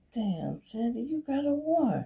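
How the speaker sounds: hushed, slightly high half-whisper. Retelling half-whispering to sandy while the warrant shows up, retelling a half-whisper. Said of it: "We whispering".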